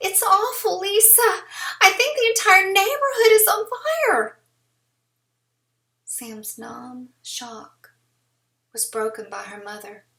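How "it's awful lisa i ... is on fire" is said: strained, shrill voice pitched far too high, loud. A woman on the phone reports the neighborhood is burning, high, strained voice. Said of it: "voice pitched too high and strained".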